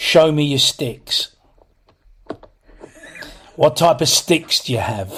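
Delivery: unsettling, creepy, put-on come-on voice. Talking about answering band adverts, the speaker imitates one in a creepy voice. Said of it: "You get that creepy voice that goes with it".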